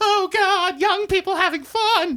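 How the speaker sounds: very high-pitched middle-American lady voice.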